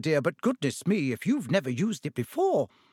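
plain

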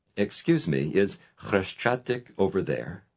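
ordinary delivery

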